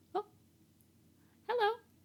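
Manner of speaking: very high, chirpy little bird voice. Improvising a scene as a bird lady character; birdlike voice. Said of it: "Sounded just like a bird".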